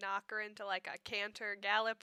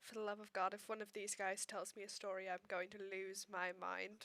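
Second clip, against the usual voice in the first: near-silent muttering under the breath; 8 dB quieter than usual. Voicing Alice, unhappy with what she just saw: muttering very silently under her breath. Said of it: "very silently under her breath going".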